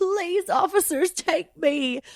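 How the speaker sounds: high, drawn-out sobbing and bawling. Retelling a plea to police about their mom, imitating own past crying. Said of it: "I was just crying".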